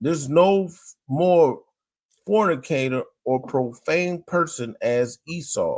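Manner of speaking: ordinary talk, nothing marked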